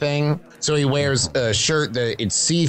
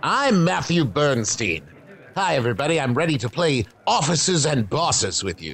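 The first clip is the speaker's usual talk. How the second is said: refined, sophisticated-sounding put-on character voice. Showing the group the character voice he came up with for Matthew Bernstein. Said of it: "the character voice I came up with for Matthew Bernstein".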